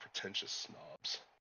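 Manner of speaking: barely audible, very quiet whispered mutter under breath. After a local praises the city, a character mutters under his breath, very quietly. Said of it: "mutter under his breath really quietly".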